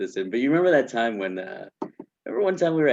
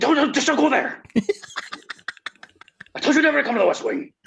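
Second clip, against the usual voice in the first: mock-angry creature voice, much higher; 3 dB louder than usual. Retelling a joke about a man who would get mad, mock-angry Beast impression. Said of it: "He would get so mad".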